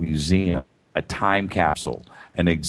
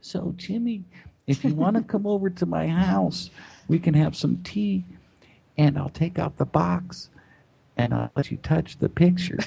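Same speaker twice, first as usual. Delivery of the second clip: tiny, very high, small little-lady voice; 12 semitones higher than usual. Retelling what a woman on his show said to him: little Ann Druffel voice. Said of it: "in her little Ann Druffel voice".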